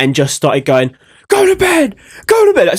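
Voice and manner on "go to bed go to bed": put-on very high scream, repeated. Retelling shouting at a friend in sleep: imitating someone screaming. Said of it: "screaming at him".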